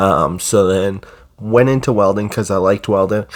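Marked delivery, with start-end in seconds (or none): none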